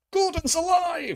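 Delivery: very high, grand, stately parliamentary-style proclaiming voice. Speaker joking about a rebel Prime Minister, bursting into a Brian Blessed voice. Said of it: "a Brian Blessed voice as Prime Minister".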